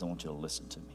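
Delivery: quiet, hushed, almost whispered talking voice. Speaker recalls his father setting him down to talk: retelling father's quiet voice. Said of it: "when he got quiet and he set me down".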